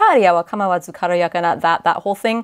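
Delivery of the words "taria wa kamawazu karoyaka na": usual speaking voice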